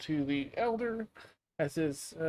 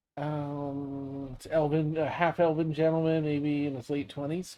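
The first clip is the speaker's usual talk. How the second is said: ordinary delivery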